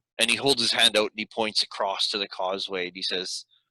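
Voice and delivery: ordinary talk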